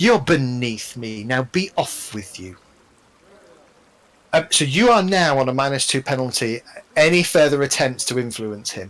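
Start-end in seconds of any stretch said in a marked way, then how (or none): 0.0-2.6 put-on contemptuous, dismissive tone. Voicing an NPC who looks over at a player and answers: scornful NPC rebuke. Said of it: "he kind of looks over at you and he sort of says".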